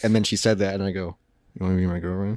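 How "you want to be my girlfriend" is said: murmured, lower, quieter. Retelling how he asked a woman to be his girlfriend, murmured under breath. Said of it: "I murmured it under my breath".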